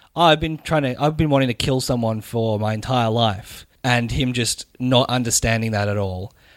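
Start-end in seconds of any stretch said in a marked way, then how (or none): none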